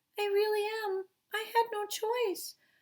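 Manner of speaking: tiny, small, very high-pitched little voice. Reading a story, a creature answers Eliza from outside: little voice. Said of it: "came a little voice".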